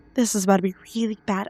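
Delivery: quiet muttering under the breath. Voicing Sprocket as the group heads over: muttering under her breath. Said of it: "mutters under her breath".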